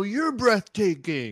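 very loud, high film-star voice, belted out. Showing how an actor talks in newer films: Keanu Reeves impression. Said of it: "like that Keanu Reeves".

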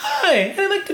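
very high-pitched put-on phone voice. Acting out someone calling to place an order, attempted high-pitched voice. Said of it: "I can't even do a high-pitched voice".

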